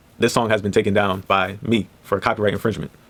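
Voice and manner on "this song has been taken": usual speaking voice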